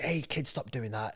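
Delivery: put-on telling-off tone. The speaker acts out what the thirty-seven-year-old man might say: mock telling-off. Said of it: "He might tell you off a little bit".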